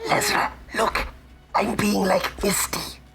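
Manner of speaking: very high, hushed stage whisper. Whispering to a companion while crouched hiding in shadows: whispering in character. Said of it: "I whisper back to her and I say".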